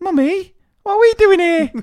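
put-on very high small-child voice. A mother retelling arriving at work with her daughter still in the car, imitating small daughter's voice. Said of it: "I loved your impression of the daughter".

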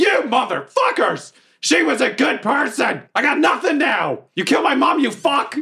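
high, furious shout. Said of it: "And I'm like".

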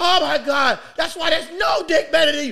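screaming at the very top, very high and very loud. Retelling what a woman shouts when she comes, imitating her screaming. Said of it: "She's screaming".

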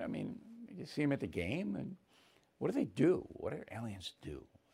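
very quiet, hushed, mocking tone. Speaking to Stephen about a claim from Harvard, mocking. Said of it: "I'm mocking".

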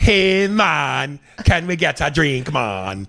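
clumsy put-on Jamaican accent. Mocking suburban tourists who visit Jamaica, bad Jamaican accent.

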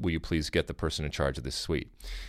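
very low, dry, level, straight deadpan delivery. Retelling how Rob Stone asked for the person in charge: imitating Rob Stone deadpan. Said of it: "Rob Stone then just deadpans".

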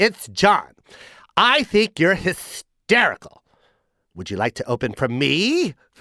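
put-on nasal comic voice. Retelling a phone call, imitating Jon Lovitz's voice. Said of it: "He talks like that for real".

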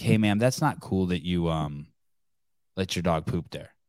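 calm and even. Showing how he should have spoken to a lady instead, really calm. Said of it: "Like say it in a really calm way".

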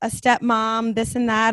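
plain

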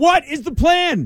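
drawn-out, slow, very high yell. Asking about a coach's plan during an argument, yelling. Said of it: "I'm sorry I'm yelling".

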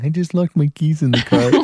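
gloomy, mopey, sad donkey voice. Acting out what the listener said to a man on coming back: Eeyore voice. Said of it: "why do I sound like Eeyore?".

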